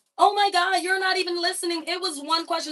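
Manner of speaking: high, loud, upset whine.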